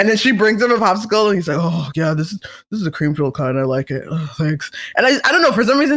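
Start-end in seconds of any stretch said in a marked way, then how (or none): 1.6-4.7 put-on breathless voice, lower. Acting out an imagined lazy partner on the couch: imitating out-of-breath voice. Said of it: "his voice is gonna be all, like, like, out of breath".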